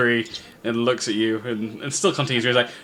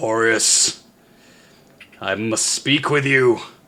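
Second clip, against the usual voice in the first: dramatic, otherworldly, godlike voice from the depths. Narrator voicing a voice heard in the listener's mind, addressing corporeus, thunderous booming voice. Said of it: "you hear a thunderous voice".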